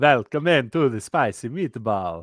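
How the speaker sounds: put-on vampire voice. Told by another speaker to redo the phrase, the speaker tries again in a Dracula voice. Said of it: "you need more of a Dracula voice".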